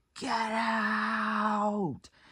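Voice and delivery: very loud, high-pitched scream.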